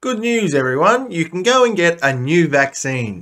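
openly sarcastic, high, swooping delivery. After a grim news item, a commentator moves to the next story, sarcastically. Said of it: "I'm being sarcastic if you didn't know".

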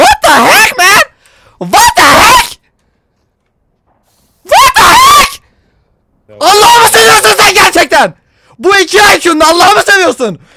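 high, loud, furious shouting rant.

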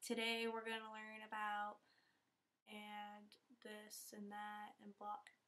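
low, flat, bored monotone drone with no pitch lift. Imitating boring teachers at school, in a flat monotone voice. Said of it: "They talk in such monotone voices, like they're literally just like".

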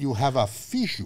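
put-on heavy German accent, laid on thick. Retelling what the doctor said: heavy thick German accent. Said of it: "very heavy, thick, uh, German accent".

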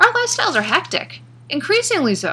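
high, direct and personal tone.

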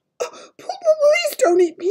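halting stutter, very high, slow, pleading. Narrator reads Sophie's words to the giant, stammering. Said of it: "Sophie stammered".

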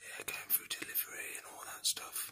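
soft, unvoiced whisper. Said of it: "I don't wanna speak too loud".

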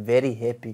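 put-on Zimbabwean accent with a twang. Showing how his dad would say the words: Zimbabwe twang. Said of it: "if you ask my dad, he would say".

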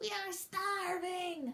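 tired, groaning voice. Reading a story aloud, redoing a starving turtle's line, groaning. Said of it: "Maybe I should have said it like".

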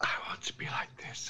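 hushed whisper. Asked by the game master how quietly to whisper it, the player shows it: whispering. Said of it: "I want to talk like the wind".

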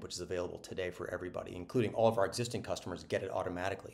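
fast, rattled-off speech. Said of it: "I'm talking fast".

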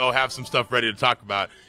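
ordinary talk

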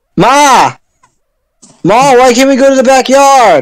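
very high, put-on Brooklyn-accented hollering. Streamer voicing game hero Alex yelling at his mother, put-on Brooklyn accent. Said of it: "The whole time it's just Alex yelling at his mother. / we keep giving Alex a Brooklyn accent".

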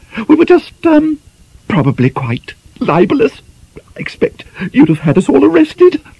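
very high, nervous, jittery titter. Reading the scene, voicing Miss Peavy speaking to Mr. Chatford, tittering nervously.

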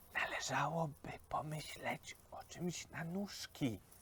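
voice dropped right down to a hushed whisper. Pan Dok advises Ferdynand on what else he needs, speaking very quietly. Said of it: "Tu pan Dok całkiem ściszył głos".

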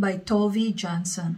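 ordinary delivery, nothing marked

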